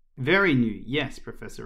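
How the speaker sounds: ordinary delivery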